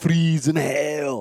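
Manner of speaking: put-on thick Austrian accent, loud and high. Describing a movie villain's line, Arnold Schwarzenegger impression. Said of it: "big, thick Austrian accent".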